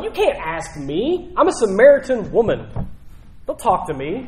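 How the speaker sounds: offended, appalled, disgusted, recoiling tone. Retelling the samaritan woman's answer to a request for water, mock-appalled reply. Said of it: "Almost like appalled by".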